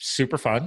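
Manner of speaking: dry, sarcastic tone. Describing a partial collapse of the lung as an illness: sarcastic. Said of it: "I am being sarcastic".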